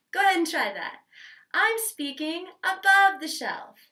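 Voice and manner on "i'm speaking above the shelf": higher pitch, slow and deliberately placed. Demonstrating for the listener how speaking above the shelf sounds: higher-pitched voice. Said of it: "do you hear that difference".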